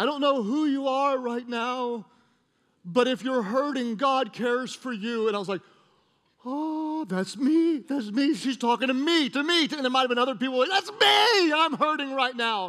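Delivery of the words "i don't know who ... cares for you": soothing, gentle, comforting angelic woman's voice. Retelling what a woman's voice said, imitating a soothing, angelic female voice. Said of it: "soothing female voice".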